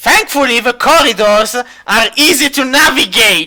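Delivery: loud, high-pitched, taunting, jeering tone. Voicing the cult leader character, say this in a mocking tone. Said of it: "The cult leader says in a mocking tone".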